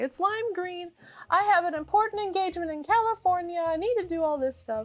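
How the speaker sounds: acted tearful begging. Retelling begging airport staff about a lost bag: retelling a crying plea. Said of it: "Cry, cry, cry".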